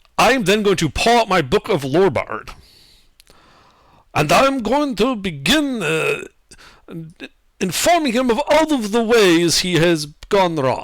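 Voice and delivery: put-on slipping into a Russian accent. A tabletop game player declares their next move, slipping into a russian accent. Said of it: "I kind of went into a Russian accent there".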